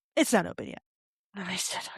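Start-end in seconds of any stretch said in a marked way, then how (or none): 0.1-0.8 acted blunt, terse, curt, short delivery. Retelling how a staff member answered a question: imitating a curt reply. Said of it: "they very curtly just go".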